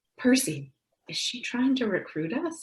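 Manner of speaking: high, hushed half-whispered aside. Playing Madeira, asking the closest companion about recruitment: half-whispering in character. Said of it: "Madeira's gonna whisper to whoever is closest".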